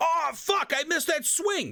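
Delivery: very high-pitched screaming outburst. Explaining microphone placement to viewers, demonstrating screaming at the game. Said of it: "if I scream at the game like".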